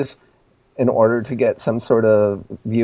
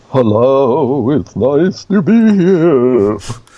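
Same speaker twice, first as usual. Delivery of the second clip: loud, drawn-out, spooky put-on creepy voice; 3 semitones higher, 5 dB louder than usual. A guest greets the host on arrival at the show, in a creepy voice. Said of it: "Great creepy voice".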